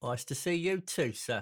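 put-on London Cockney accent. Greeted by name on the show, reply politely in a Cockney accent. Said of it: "your Cockney accent's far more impressive than his was".

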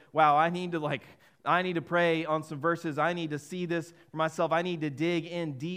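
plain

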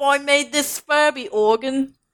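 put-on British accent. Imitating a musician who built a Furby organ: British accent. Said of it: "you just go into, like, a British accent".

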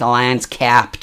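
poor, bad, put-on American accent. Retelling what a woman in the queue said, in a bad american accent. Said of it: "in case that wasn't a very good American accent".

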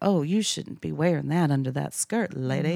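Southern belle manner of speaking. Describing how her mom did not say things: southern belle voice. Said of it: "say it like a Southern belle".

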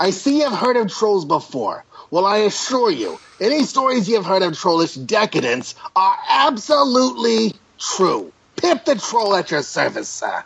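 high comedian voice, pitch swinging wildly. Reading Pip the Troll's introduction of himself out loud, in a Gilbert Gottfried voice. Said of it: "I would be reading him with a Gilbert Gottfried impression".

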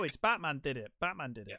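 ordinary talk, nothing marked

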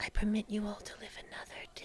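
put-on voice of a little girl. A little girl slinks back below a windowsill, speaking to the group; little girl's voice. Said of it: "You just hear the little girl's voice again".

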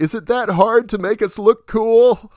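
shrill, high, drawn-out yell. Retelling a film scene where a character yells to the air: retelling a yell. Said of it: "he's yelling to the air".

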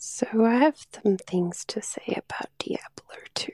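hushed whisper. Opening a recorded message about a game, whispering. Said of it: "I assume she's whispering".

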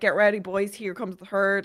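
ordinary talk

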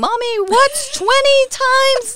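put-on very high-pitched screaming little child voice. A parent retelling a phone call interrupted by her child, imitating a child screaming. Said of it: "there's my child screaming".

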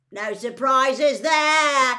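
very loud, high, carrying yell. Narrator voicing a spectator in the hall as the Durmstrang champion is announced: yelled. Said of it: "yelled Ron".

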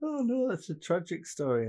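talking through laughter. Reacting to a sad story, laughing while talking. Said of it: "I'm sorry for laughing at that bit".

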